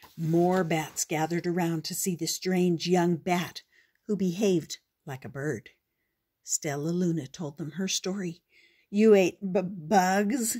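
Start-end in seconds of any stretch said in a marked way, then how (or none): 8.9-10.6 stuttering, slower. Narrator reads one bat reacting to a young bat's story, stuttering. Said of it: "stuttered one".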